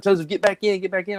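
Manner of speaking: hollering, short of screaming. Retelling his wife calling him back in as a bobcat appears, imitating her hollering. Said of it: "but kind of hollering".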